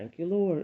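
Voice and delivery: sincere grateful voice.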